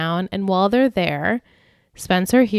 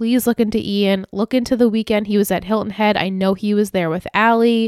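ordinary talk

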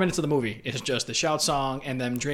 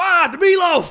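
put-on man yelling, higher and louder; 10 dB louder than usual. Retelling a football broadcast moment: imitating Eli Manning yelling. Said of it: "And he just starts yelling".

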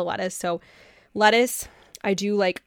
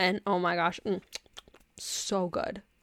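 lip-smacking, savoring mm sound; 6 dB quieter than usual. Describing a salad topped with balsamic glaze, smacking lips while talking. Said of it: "Sorry for smacking".

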